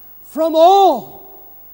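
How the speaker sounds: all stressed hard, loud and high. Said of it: "I put emphasis on the word all".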